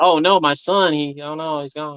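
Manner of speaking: fake grieving voice. Joking with the others, the speaker pretends to have lost a son: mock grief. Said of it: "pretend I lost my son".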